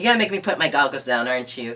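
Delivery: ordinary talk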